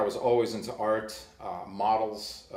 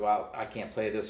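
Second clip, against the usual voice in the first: usual speaking voice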